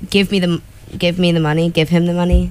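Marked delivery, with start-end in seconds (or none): none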